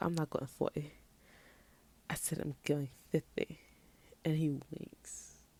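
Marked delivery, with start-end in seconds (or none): 0.0-3.6 put-on British accent. Retelling what a character told an interviewer: British accent imitating Ilya Rosanov. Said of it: "I don't know why he's British now".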